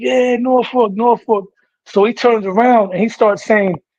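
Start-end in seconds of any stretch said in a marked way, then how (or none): 0.0-1.5 mock, mild, excited, worked-up fan holler. Retelling how a fan at a fight got up: imitating a fan screaming. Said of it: "started screaming".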